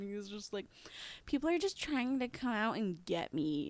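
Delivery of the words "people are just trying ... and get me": put-on high, loud, defensive teenage voice. Retelling a suspect's words from an interrogation: imitating defensive teenager talk. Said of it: "it's that teenager talk".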